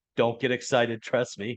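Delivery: ordinary delivery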